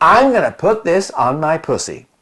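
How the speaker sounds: bad, terrible put-on American accent. Quoting a quiet, professional american actress during a shoot, in a terrible american accent. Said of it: "so I did a terrible accent".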